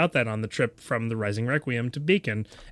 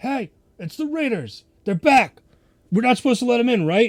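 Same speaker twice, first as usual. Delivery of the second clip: very high-pitched, loud yell; 12 semitones higher, 6 dB louder than usual. Voicing a guard on the wall calling back about the raiders: yelling back. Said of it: "he kinda yells back".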